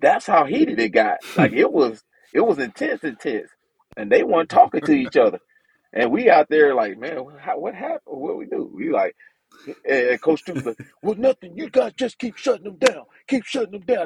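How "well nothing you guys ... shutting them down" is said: raspy voice, strong and high-pitched. A player retells what Coach Stoops told the team, strong raspy voice. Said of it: "He got this strong, raspy voice".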